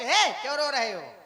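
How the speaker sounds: loud, rude, blunt, offhand manner. Showing how badly the other asked about crying: mocking a rude way of asking. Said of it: "कोई रो रहा है तो इस तरह का".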